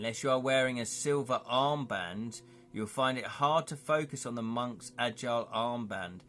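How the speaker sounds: plain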